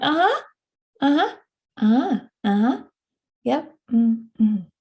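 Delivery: distracted, absent-minded, half-listening uh-huhs. Retelling a therapist replying while tapping at a phone: imitating distracted uh-huhs. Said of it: "tapping away at his phone, like".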